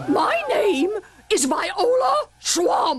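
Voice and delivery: high, scratchy voice. Reading a story aloud, a lady introduces herself to the kids in a scratchy voice. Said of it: "said the lady in a scratchy voice".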